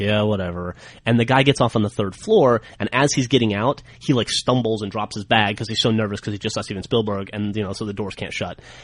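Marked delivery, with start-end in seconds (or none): 0.0-0.8 put-on dismissive eye-rolling tone, lower pitch. Retelling an annoyed reply in an elevator: imitating Steven Spielberg rolling his eyes. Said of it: "rolls his eyes and is like".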